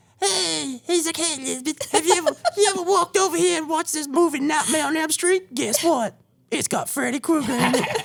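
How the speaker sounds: very high talking-cat voice. Doing the voice the speaker gives the deaf cat Tony. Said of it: "That's what the cat sounds like".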